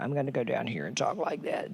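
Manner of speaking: very soft, very quiet, crackly low-register voice. Showing how people talk to save their voices: imitating crackly low voice. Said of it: "crackly low".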